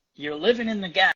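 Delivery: put-on American southern accent. Retelling what a man said to the speaker while in a hurry; southern accent. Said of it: "in his southern accent".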